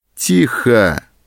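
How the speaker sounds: loud yelling. Narrator reads the sergeant silencing the protesting man, shouting. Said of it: "крикнул сержант".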